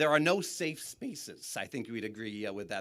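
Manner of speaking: voice cracking. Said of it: "my voice is cracked".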